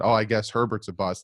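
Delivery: plain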